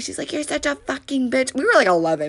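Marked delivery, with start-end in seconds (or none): 0.3-1.5 mock high, loud screaming, very close and intense. Retelling a fight where a girl screamed at the speaker: imitating someone screaming. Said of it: "screaming at me".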